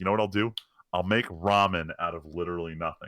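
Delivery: ordinary delivery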